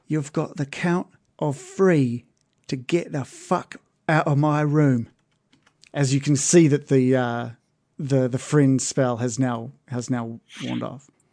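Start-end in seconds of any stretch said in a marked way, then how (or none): 0.1-5.1 threatening whispered voice. Voicing a character who leans into a player's ear: whispering menacingly. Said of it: "to whisper into your ear".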